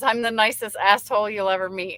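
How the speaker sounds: usual speaking voice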